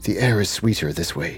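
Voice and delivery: hushed whisper. In the cavern scene, the character speaks only to Peregrine, whispering. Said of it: "I whisper to Peregrine and I say".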